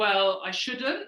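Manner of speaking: upward inflection, rising pitch ending on shouldn't. Explaining vocal inflection, answering someone's offer: rising at the end on shouldn't. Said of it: "you're inflecting your vocal tone up".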